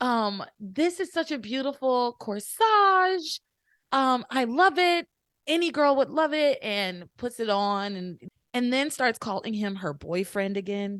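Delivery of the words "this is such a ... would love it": put-on gushing girl voice, higher and louder. Retelling a scene where a character bounds in: imitating Simone bouncing in excitedly. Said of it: "Simone comes bouncing around the corner like".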